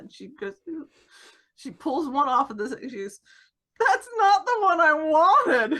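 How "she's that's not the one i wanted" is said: put-on weepy voice, much higher, louder. Retelling what a doped-up woman said after eye surgery, imitating a weepy, emotional voice. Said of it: "She's just like so weepy and emotional".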